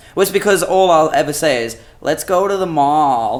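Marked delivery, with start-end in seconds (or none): 2.0-3.5 put-on unhurried Californian valley girl accent, mall drawn out. Asked to do her accent, she shows how she sounds: valley girl voice. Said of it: "I just sound like a valley girl".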